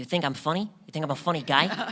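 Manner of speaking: voice pushed through the nose. Quoting a line after another speaker says they love Joe Pesci: Joe Pesci impression. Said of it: "I love Joe Pesci".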